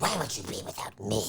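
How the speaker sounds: rushed, effortful, straining character voice. Trying the harder voice the others call very hard: Gollum voice. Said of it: "the Gollum is really hard".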